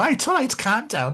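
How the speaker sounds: high, drawn-out Liverpool Scouse accent. Talking about regional accents, a speaker demonstrates a Scouse accent. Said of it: "you can't do a Scouse accent until you go".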